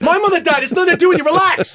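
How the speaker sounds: mock scolding, telling-off tone.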